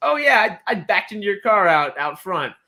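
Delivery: mock sarcastic sing-song tone. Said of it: "but in a sarcastic way".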